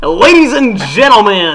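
very loud, put-on southern game show host voice. Talking about a game show, one speaker tries an impression: southern game show host voice. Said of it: "I think I can do an impression".

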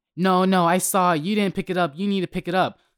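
imitated yell. Retelling what a woman shouted at the speaker: imitating someone yelling. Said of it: "she starts yelling at me".

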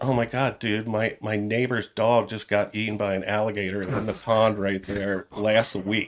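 normal talking voice

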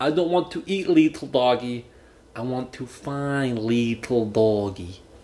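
fake Russian accent. Acting out an inside joke, speaking in a pseudo-Russian Gru accent. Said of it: "Like a pseudo-Russian Gru".

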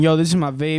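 ordinary talk

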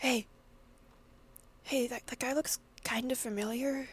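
hushed whisper. Eric, a character, speaks quietly to you, whispering. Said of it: "whispers to you".

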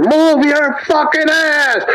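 mock furious, very high, raging yell. Retelling bolting across a parking lot after a man; retelling a furious scream. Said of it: "bolting across the fucking parking lot screaming at this motherfucker".

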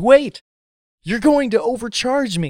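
put-on sudden, high, shrill screamed outburst. Acting out a deli customer stopping the clerk: acting out a scream. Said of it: "the person in front of you screams".

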